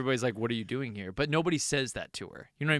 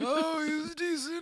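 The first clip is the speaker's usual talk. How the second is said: put-on elderly woman voice, higher; 14 semitones higher than usual. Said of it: "You sound like an old lady".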